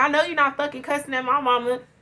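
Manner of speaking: fast, put-on hollering in a scolding tone. Retelling a woman hollering at you while bagging laundry, imitating someone hollering. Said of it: "get to hollering at me like".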